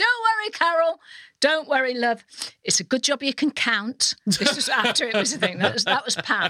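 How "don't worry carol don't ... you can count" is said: pitched-up, loud shout. Retelling a cousin shouting up from downstairs: imitating Pam shouting up. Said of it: "she shouted up".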